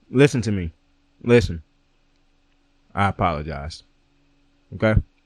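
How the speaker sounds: talking while chewing food. Apologizing to a man and his group, talking with mouth full. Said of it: "you're not supposed to talk with food in your mouth".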